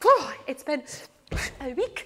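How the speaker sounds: high, laughing, hammed-up horrible French accent. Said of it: "That's my horrible French accent".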